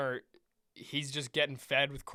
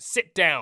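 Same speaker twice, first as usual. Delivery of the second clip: put-on, far raised, loud, angry barking voice; 2 semitones higher, 11 dB louder than usual. Retelling how a man at the game told them: imitating an angry man.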